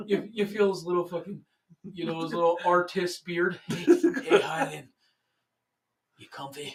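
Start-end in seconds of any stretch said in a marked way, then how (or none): 3.7-6.8 slow, creepy, unsettling voice, very close to the ear. Answering what sound is scariest at night, imitating Sal. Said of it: "Sal in your ear".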